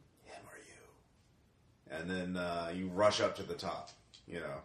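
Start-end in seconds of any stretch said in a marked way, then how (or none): 0.2-1.9 ghostly, eerie, hushed, breathy, barely voiced whisper. Voicing a whisper the player hears in the dark: eerie whisper. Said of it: "you hear a whisper".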